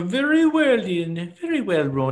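put-on Irish accent. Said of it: "one of your bad Irish send-offs".

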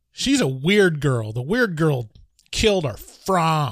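exaggerated, over-the-top bully taunt with swooping pitch. Retelling a movie scene where a red-haired bully taunts Charlie: imitating an over-the-top bully. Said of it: "the world's most over-the-top ginger bully".

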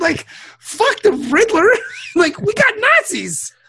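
high, wide-ranging pitch, incredulous ranting delivery.

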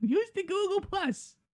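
put-on old-lady voice, very high. Talking about Google Plus, the speaker puts on an old biddy voice. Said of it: "sounds like an old biddy".

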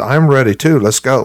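ordinary delivery

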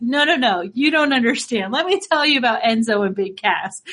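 plain

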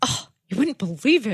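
mock disapproving, judgy, high tone. Repeating the other speaker's remark back, mocking a judgmental tone. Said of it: "That was extremely judgmental".

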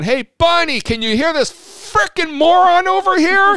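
very high, shrill, all-out yell, rising pitch. Recounting being yelled at in Walmart, retelling own yell at full volume. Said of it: "I yell as loud as I can".

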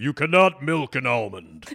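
very loud, deep, booming broadcaster voice. Quoting an old broadcaster friend, in a big deep Orion Samuelson voice. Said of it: "in the big deep Orion voice".

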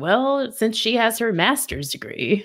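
sarcastic tone, small dig. Complaining about repeated mentions of her degree: imitating Pete's sarcastic tone. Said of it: "the tone is often like".

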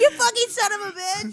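very high put-on outburst.

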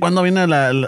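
normal talking voice

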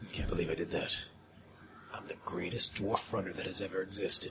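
very low, very quiet, stoic murmur. Playing a dwarf character on an audio podcast, in a very quiet, low voice. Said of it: "You're very quiet".

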